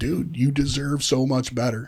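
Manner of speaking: mock-tearful crying voice. Retelling what he said to them while crying, imitating someone crying. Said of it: "looks at me crying".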